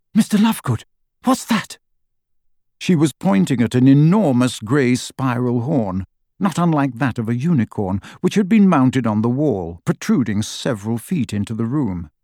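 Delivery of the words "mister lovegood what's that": very high, startled, shocked small cry. A girl points at a huge horn mounted on her host's wall, with a small cry of shock. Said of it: "Hermione let out a small cry of shock".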